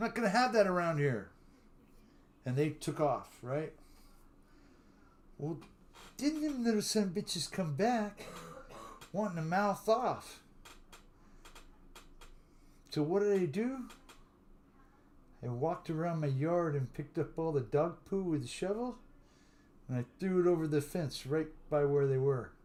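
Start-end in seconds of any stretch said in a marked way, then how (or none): 0.0-1.3 loud yelling. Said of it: "And I yelled over there and I said".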